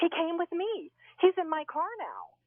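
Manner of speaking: frantic, panicked, very high, drawn-out yelling. Retelling a phone call from Laura while driving, imitating Laura's frantic yelling. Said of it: "she's frantically yelling at me".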